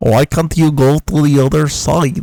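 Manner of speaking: loud, belted, bad Russian accent. Talking about what they found funny, quote Colossus in a Colossus Russian accent. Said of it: "I can't do a Russian accent".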